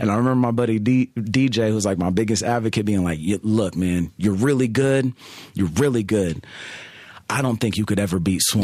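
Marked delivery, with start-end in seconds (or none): none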